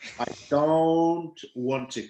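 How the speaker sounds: slowed-down playback voice.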